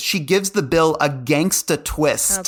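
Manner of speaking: plain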